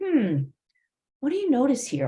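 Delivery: pondering "hmm", pause, then swooping inflected line. Demonstrating how to use inflection when asking a question, thoughtful pause before question. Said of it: "I'm maybe pausing".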